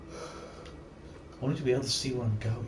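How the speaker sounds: soft, slow, hushed whisper. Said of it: "Why am I whispering?".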